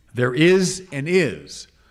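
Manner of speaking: loud, slow, very emphatic declaration. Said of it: "say very emphatically, with a blow upon the table".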